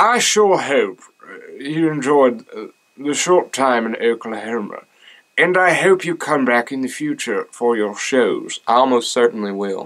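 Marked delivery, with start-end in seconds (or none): 0.0-8.6 put-on British English accent. Reading a message aloud after being asked to, in a British accent. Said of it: "You may do like a British one?".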